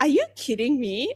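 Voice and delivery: mock-incredulous. Retelling her own reaction to a man's claim, mock-incredulous. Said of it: "I didn't use that tone".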